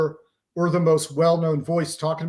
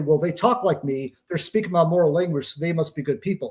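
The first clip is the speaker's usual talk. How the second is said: ordinary talk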